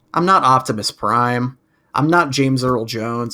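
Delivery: plain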